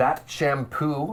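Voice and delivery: deliberate, very slow, drawn-out, over-slowed words. Retelling how a shop clerk repeated the question: imitating very slow speech. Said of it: "really, really slowed it down".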